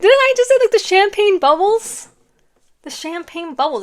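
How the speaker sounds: thrilled shouting, very loud and very high. Giving someone their reading and excited for them, excited yelling. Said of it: "Like I feel like I'm yelling".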